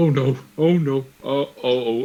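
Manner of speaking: slow, desperate, drawn-out, panicked pleading. Voicing a character sinking into vines: pleading in panic. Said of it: "he's just pleading".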